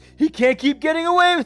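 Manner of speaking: shrill, booming, very high and loud put-on voice. Attempting a character's line, in a Jesse Pinkman voice. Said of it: "I can't really do his voice. Oh, I, I could try this".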